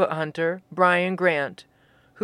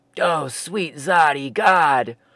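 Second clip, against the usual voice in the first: spoken with a cough, lower pitch; 4 semitones lower than usual. Crunching a dry pretzel stick, a man exclaims while coughing. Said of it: "Fosby said with a cough".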